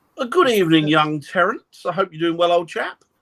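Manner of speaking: very bad put-on posh accent. Speaking directly to someone in a bad posh accent. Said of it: "That was my posh accent there, very bad".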